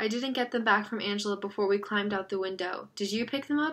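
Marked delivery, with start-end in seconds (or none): none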